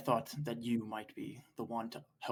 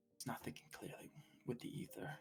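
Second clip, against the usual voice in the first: muttered under breath, much quieter; 15 dB quieter than usual. A player voices his character speaking about a companion, under his breath. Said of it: "just kind of under his breath be like".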